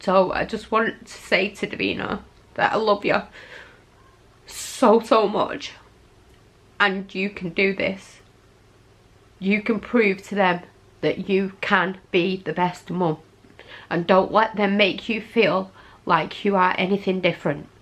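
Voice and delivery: slow, tearful, emotional, crying through every word. Sending a message of support to someone who will watch tonight: emotional, crying. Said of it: "I don't want to keep crying".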